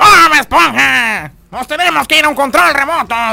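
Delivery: rough, creaky, raspy cartoon squid voice. Asked on air to close the program, a host does the Calamardo voice. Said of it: "¿Puedes hacer la voz de calamardo?".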